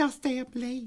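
put-on girl voice, very high-pitched. Asked to redo the girl voice from a story: put-on girl voice. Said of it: "Do that girl voice again".

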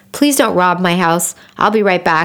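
ordinary talk, nothing marked

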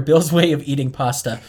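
ordinary talk

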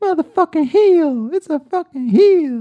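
very high, very loud, drawn-out ranting scream. Doing a podcast host's impression of a wrestling manager: Jim Cornette impression. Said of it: "his Jim Cornette".

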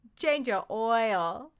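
full-blown loud, high put-on Mandarin accent, "oil" stretched. Urged to go full out, the speaker tries: Mandarin Chinese accent. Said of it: "speak with a Mandarin accent".

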